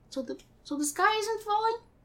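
very high, soft, hushed little voice. Asking in a story scene if the sky is falling: Piglet voice.

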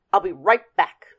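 firm, stern voice. A man stuck minding the narrator, eager to leave for the game: stern. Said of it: "he told me sternly".

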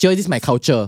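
schoolboy-style put-on Chinese accent. Retelling what the boys at school said back to the teacher, Chinese accent. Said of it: "In that Chinese accent".

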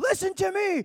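very high, top-of-the-lungs scream. Retelling standing up at a skate park with no microphone: imitating own scream. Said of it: "just screaming at the top of my lungs".

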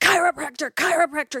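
acted, urgent, insistent, repeated screaming, kept contained. Speaker recalling screaming at the TV during a show, retelling screaming at the TV. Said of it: "I'm screaming at the TV going".

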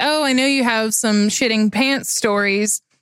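normal talking voice

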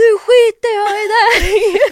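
long, shrill, very high, drawn-out, full-volume yell. Retelling how they yelled at a companion who stopped to tie his shoes, retelling a shout. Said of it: "så skrek jag bara".

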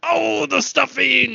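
very high-pitched, squeezed, creaky voice. Imitating a dinner guest asking about stuffing: sounds like Bill Cosby. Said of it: "almost sounded like Bill Cosby".

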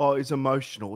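ordinary delivery

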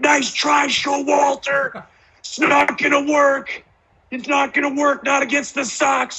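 play-acted, very high-pitched, shrill hollering. Retell a teammate coming into the Four Seasons at 3 a.m., imitating Pedroia yelling. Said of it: "Pedroia's coming in the Four Seasons just yelling like".

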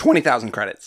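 voice breaking and cracking. Answering a trivia question out loud: voice cracking. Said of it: "Oh, voice crack".

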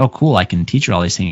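ordinary delivery

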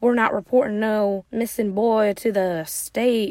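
put-on Southern US accent. Retelling what the boss said in a movie: imitating a southern accent. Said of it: "in that Southern accent".

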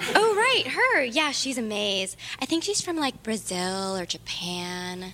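put-on mean schoolgirl voice. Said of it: "She speaks in Tiffany number three's voice".

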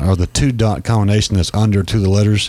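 ordinary delivery

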